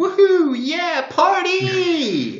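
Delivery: mock, very high, loud, drawn-out party whoop. Retelling how someone greets strangers in party towns: imitating a loud party greeting. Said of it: "walking up to somebody and going".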